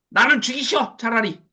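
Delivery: mock furious, angry ranting. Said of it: "악을 빽빽 쓰면서".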